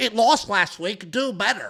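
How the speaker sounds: slow, mocking, put-on commenter voice. Speaker mimicking how commenters on last week's video talk, in mocking commenter voice. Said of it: "you'll do it in that voice".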